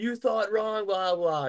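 put-on, high, gloating, losing-it screamed yell. Retelling how she screamed into her phone after the win; imitating someone screaming. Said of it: "And she's like screaming".

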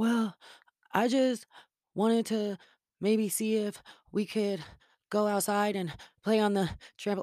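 put-on winded, huffing, slow, breathy surfer-boy drawl. Showing a friend exactly how he talks, the speaker imitates him, out of breath. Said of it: "This is how he talks".

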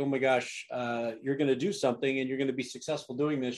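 plain

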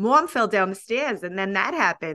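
put-on Boston–Rhode Island accent. Imitating a woman on a show set in Manhattan: Boston Rhode Island accent. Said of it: "Her accent to me sounds kind of like Boston, Rhode Islandy".

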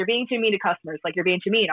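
ordinary talk, nothing marked

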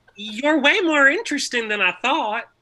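piercing, way up high and very loud. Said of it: "your Sutton impression".

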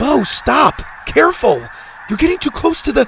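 frantic, urgent, very high-pitched voice. Reading a girl warning a boy getting too close to the edge, frantic urgent warning. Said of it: "Zada on her feet, frantic warning".

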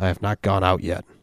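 imitated demonic voice. Retelling a story about demons, quoting their reply: imitating a demonic voice. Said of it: "a demonic voice says".

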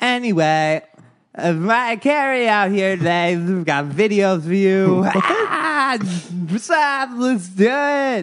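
dragged-out, dazed, high-pitched drawl. Imitating a VJ introducing videos with a lollipop: Jesse Camp impression, sounding high. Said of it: "a lollipop in his mouth".

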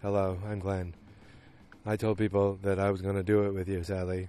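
flat, level, dead-even one-note monotone. Describing Glenn, Sally's friend, and his monotone voice: Glenn's monotone voice. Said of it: "Glenn has, a wonderful, monotone voice".

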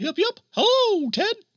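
mock squeaky mouse voice. A theme park supervisor greeting Ted on the phone, as Mick in a mouse-like voice. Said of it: "that sounds suspiciously like a mouse".

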